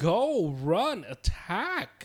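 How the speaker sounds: loud, hollering yell. Retelling watching the game at home: imitating own yelling at TV. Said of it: "I just kept yelling at my T V".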